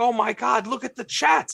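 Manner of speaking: high, fuming, exasperated outburst.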